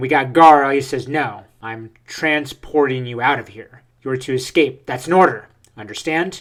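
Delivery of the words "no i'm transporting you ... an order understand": ordinary talk, nothing marked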